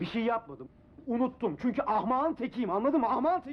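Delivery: very high, angry, furious yelling shout. Admitting to having forgotten during an argument, angrily shouting. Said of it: "bu kadar kızıp bağırmana gerek yok".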